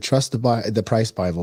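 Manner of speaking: ordinary talk, nothing marked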